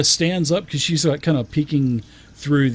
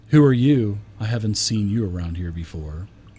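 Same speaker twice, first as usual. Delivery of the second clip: low, sultry feminine voice; 5 semitones lower than usual. Voicing a prisoner in a cell greeting a stranger: sultry feminine voice. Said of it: "a very sultry feminine voice".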